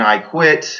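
ordinary delivery

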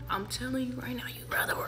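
whispered, hushed aside.

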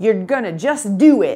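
slow, drawn-out Southern American drawl. Imitating a man who worked problems on the board: fast-talking Southern accent. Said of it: "he had a Southern accent, and he talked really fast. I can't even impersonate him, but I will attempt".

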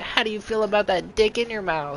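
shrill squeak, very high pitched. Retelling your seventh-grade reply from an old video, very high-pitched squeaky voice. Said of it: "Like the most high-pitched voice ever".

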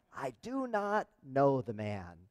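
slow, deliberate, weighty reading of each word. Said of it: "That graphic came up just at the right time".

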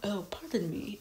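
very quiet, lovely, charming voice. Praising the actor voicing Paddington, lovely, charming Paddington voice. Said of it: "such a lovely, charming voice".

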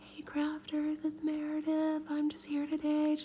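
hushed, slightly high, stage near-half-whisper. Imitating how she sounded in her craft expo videos, imitating own half-whispering. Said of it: "I sound like this".

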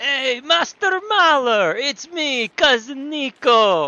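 put-on Eastern European accent, laid on thick, slow. Doing Niko from GTA 4 greeting his cousin, in a put-on Eastern European accent. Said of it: "do Nico from GTA 4".

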